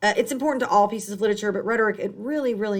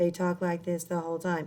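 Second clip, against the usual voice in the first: low, fast, flat, unvaried monotone drone; 4 semitones lower, 8 dB quieter than usual. Explaining tone, demonstrating how a monotone speaker talks: monotone voice. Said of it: "it's monotone".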